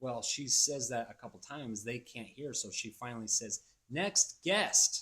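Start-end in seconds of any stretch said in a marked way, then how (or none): 3.9-5.0 very high, sharp, snappy, raised call. Retelling how she finally called the next guest in line, snappy. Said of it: "and says it like snappy".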